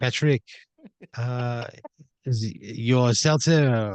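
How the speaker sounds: very slow, put-on French accent. Voicing a character who talks like a french guy: french accent. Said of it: "he talks like a French guy".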